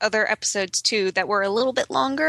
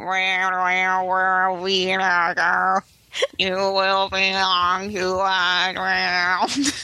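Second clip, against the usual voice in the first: put-on droning voice, much lower pitch; 2 semitones lower than usual. Speaker mimics the Cybermen from an old serial, in a didgeridoo-like Cyberman voice. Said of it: "all I could hear were talking didgeridoos".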